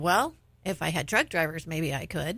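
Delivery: ordinary talk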